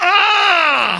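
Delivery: very high, loud, long pained groan on "ah". Explaining the hebrew word ah, painful groan on ah. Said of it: "the word ah means a painful groan. It's like".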